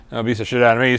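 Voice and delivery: plain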